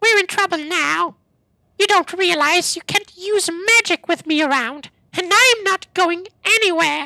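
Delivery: very high, loud, annoying pest character voice. In a role-play game, the speaker voices a pest blocking their spells, voice of the annoying follower. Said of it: "and he sounds like this".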